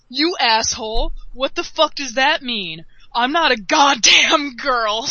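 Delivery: explosive, furious, raging, losing it completely. Retelling another player's reaction to a joke, imitating a furious outburst. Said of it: "this guy loses his shit".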